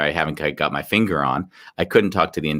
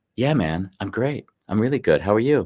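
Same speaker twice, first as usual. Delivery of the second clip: automatic autopilot delivery, slightly higher; 5 semitones higher than usual. Acting out an automatic reply to "are you okay": slightly higher autopilot voice. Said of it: "my voice is a little bit higher because I'm just responding".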